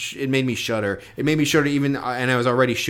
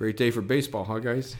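weird, soft, hushed muttering; 6 dB quieter than usual. Retelling what a guy who sat down said: imitating a weird, quick, quiet remark. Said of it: "he said it, like, really weird and, like, quickly and, like, kind of quietly".

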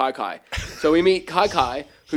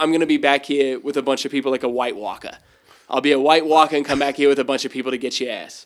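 plain

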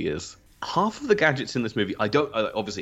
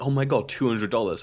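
normal talking voice

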